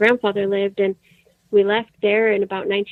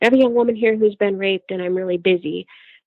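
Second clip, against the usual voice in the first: plain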